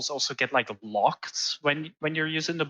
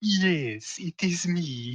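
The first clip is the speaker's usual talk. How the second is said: very slow, weird campy villain voice; 3 semitones higher than usual. Imitating how the villain sounded in the original game: really weird villain voice. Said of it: "like this really weird, like, voice".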